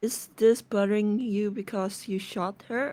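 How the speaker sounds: subdued, low-key, understated, matter-of-fact tone. Storyteller voicing Marcel as Marina vents to him; very quietly. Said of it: "just very quietly goes".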